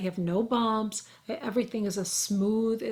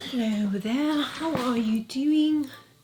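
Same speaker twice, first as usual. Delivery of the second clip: clumsy, bad put-on English accent; 3 semitones higher than usual. Trying out an english accent and failing: bad english accent. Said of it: "Trying to do my English accent".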